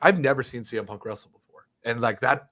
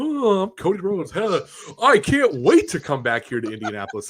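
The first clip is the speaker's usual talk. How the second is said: mocking, sing-song, pitched-up voice; 8 semitones higher, 5 dB louder than usual. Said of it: "he's like".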